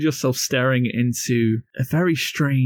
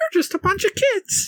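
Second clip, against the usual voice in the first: lively, animated, very high character voice. Voicing a gingerbread man who points at the players: animated gingerbread man voice. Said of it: "is a gingerbread man, animatedly pointing at you and goes".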